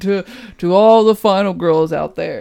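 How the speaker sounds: heroic commanding robot voice. Repeating what the other speaker just said, in an Optimus Prime voice. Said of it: "Optimus Prime".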